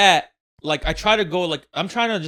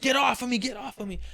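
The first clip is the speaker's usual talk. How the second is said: high-pitched, protesting scream; 7 semitones higher, 6 dB quieter than usual. Retelling a pinned-down woman on the highway: imitating someone screaming. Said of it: "obviously screaming".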